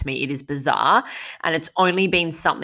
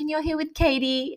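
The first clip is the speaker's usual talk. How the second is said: little cute pixie voice, pitched up; 12 semitones higher, 4 dB quieter than usual. Podcasting alone, recalling how Katie chimes in, imitating Katie's cute pixie voice. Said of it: "with her little cute pixie voice".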